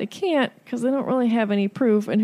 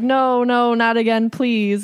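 slow, mock frightened, whimpering, pleading voice; 2 semitones higher than usual. Retelling a scene of someone overheard begging in a classroom: imitating someone whimpering. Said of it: "he heard somebody whimpering".

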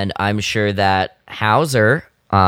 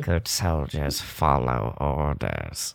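very low, deep, very quiet, very slow, barely spoken; 7 semitones lower, 10 dB quieter than usual. Speaker redoes the quoted line the way Crosshair would say it, Crosshair voice. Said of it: "That's more like Crosshair".

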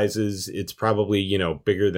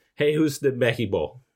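bad, terrible fake Spanish accent; 3 semitones higher than usual. Joking with others in conversation, in a terrible Spanish accent. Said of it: "That was a terrible Spanish accent".

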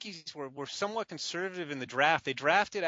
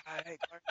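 put-on hoarse voice, barely talking, quieter; 11 dB quieter than usual. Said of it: "He can barely talk".

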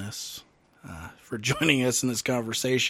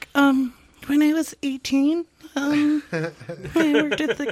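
mock innocent sweet voice, much higher and slower; 7 dB louder than usual. Retelling how a woman started her story, mock sweet voice. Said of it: "she comes in all sweet voice like".

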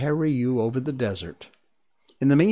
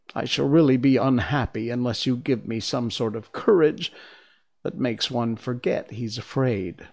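usual speaking voice

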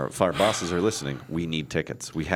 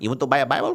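inaccurate put-on Mexican accent, pitched up; 8 semitones higher, 4 dB louder than usual. Acting out a street seller offering a smuggled Bible: put-on wrong accent. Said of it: "wrong accent".

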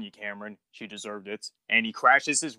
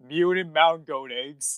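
speaking through laughter, higher pitch; 5 semitones higher than usual. Quoting a funny scene from an episode, laughing while talking. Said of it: "I'm sorry, I'm laughing".

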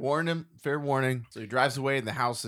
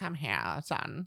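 witchy, creepy voice; 2 semitones higher, 6 dB quieter than usual. Retelling a film scene where the creepy witch lady calls someone over: creepy witch lady voice. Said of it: "cool creepy witch lady".

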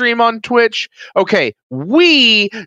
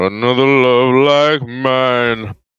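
put-on deep, smooth soul voice, pitched lower; 9 semitones lower than usual.

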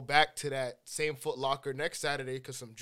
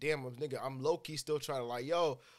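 normal talking voice

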